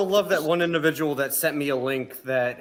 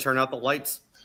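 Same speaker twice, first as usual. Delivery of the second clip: ordinary talk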